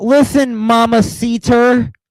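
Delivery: clumsy, bad, high-pitched non-native Spanish accent. Mocking someone speaking Spanish: imitating bad gringo Spanish. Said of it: "She sounds like a fucking gringo".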